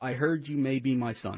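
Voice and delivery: ordinary talk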